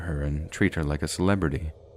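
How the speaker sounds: ordinary delivery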